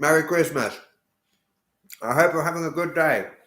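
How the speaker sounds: talking with mouth full. Replying to a viewer's christmas greeting while eating: talking with mouth full. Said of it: "Apologies for eating with my mouth full".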